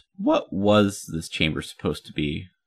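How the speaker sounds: ordinary delivery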